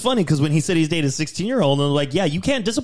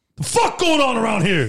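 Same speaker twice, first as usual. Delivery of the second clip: put-on scary, menacing voice; 6 semitones higher than usual. Retrying a bit after a false start, trying to sound scary. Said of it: "Let me try again".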